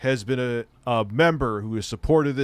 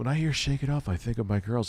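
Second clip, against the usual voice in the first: soft, hushed half-whisper under the breath; 6 dB quieter than usual. Acting out what he would half-whisper, imitating his half-whisper. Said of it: "He would just whisper".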